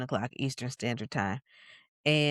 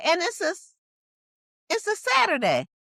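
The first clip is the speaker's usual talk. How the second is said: put-on very high, loud grandma voice. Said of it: "And that's what it sound like".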